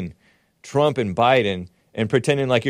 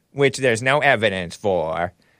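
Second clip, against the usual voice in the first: dropping into creaky vocal fry; 3 semitones lower than usual. Imitating Kaitlan Collins while complaining about fact-checking: Kaitlan Collins impression. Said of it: "that wasn't a good impression".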